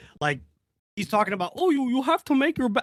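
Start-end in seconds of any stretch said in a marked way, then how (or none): 1.6-2.9 high, failed, put-on Canadian accent. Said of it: "I can't do the Canadian accent".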